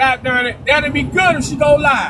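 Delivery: ordinary delivery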